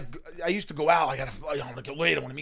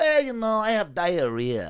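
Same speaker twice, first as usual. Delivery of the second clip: blunt put-on Filipino accent; 4 semitones higher than usual. Retelling what the Filipino stepmom said on first meeting: imitating a Filipino accent. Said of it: "That's a good Filipino".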